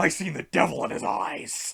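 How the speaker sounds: intense put-on wrestler voice in a breathy whisper. Reading a quoted line in the voice it was told in, wrestler impression voice. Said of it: "I gotta read this in the voice it was told in".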